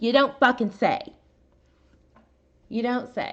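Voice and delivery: worked-up, hot-tempered tone. Reacting to news about which county took over the case, heated. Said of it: "I'm a little heated tonight".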